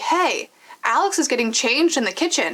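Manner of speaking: ordinary talk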